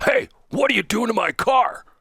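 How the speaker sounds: very high, loud, obnoxious, demanding tone. Retelling an elderly gentleman confronting him over his car: imitating a loud, obnoxious voice. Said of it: "in a very loud and obnoxious voice".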